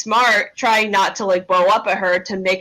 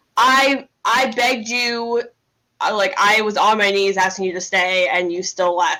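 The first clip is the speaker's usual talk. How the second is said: plain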